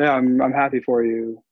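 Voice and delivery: flat, dull monotone with no enthusiasm. Demonstrating a reply with no energy behind it, monotone, no enthusiasm. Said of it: "the tone of my voice was very monotone. There's no enthusiasm. There's no energy behind it".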